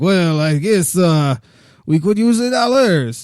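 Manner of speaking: very slow, high, dubious put-on French accent. Acting out the French agreeing to take the dollars: French accent. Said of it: "actually a French accent or not".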